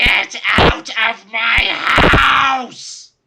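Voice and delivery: very high, very loud, shrill ghostly scream. Game master voicing an enraged apparition screaming at all the players: shrill scream. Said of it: "screams in a shrill voice".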